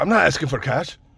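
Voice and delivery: bad put-on Middle Eastern accent. Retelling an encounter with a stranger, quoting him in a shitty Middle Eastern accent. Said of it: "I'm doing the fucking accent, the shitty accent".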